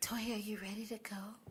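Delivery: hushed, soft, unvoiced whisper. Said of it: "Let's all talk to each other like that".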